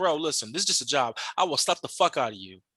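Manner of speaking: low, menacing, threatening, in-your-face voice. Retelling words to an old man on a job, getting in his face. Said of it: "get in this old dude's face".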